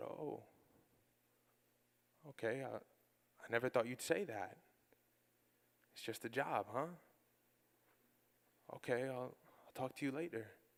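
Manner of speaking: mimicked hushed voice. Retelling what Mom said after he brushed off her excitement, imitating Mom speaking quietly. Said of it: "she got real quiet".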